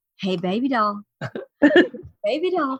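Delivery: tender, gentle coaxing tone. Retelling how someone wakes a sleeping dad, retelling a gentle wake-up. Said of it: "I'm trying to do this as gently as I can".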